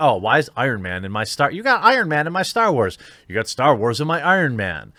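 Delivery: plain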